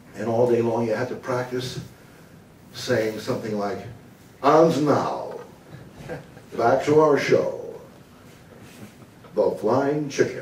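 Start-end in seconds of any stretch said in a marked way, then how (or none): 4.5-10.5 slow, smooth American announcer voice. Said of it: "speak like an American announcer".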